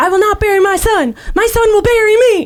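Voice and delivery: acted high-pitched screaming. Retelling a movie scene where a father yells into the phone: imitating a man screaming. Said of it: "he's screaming into the phone".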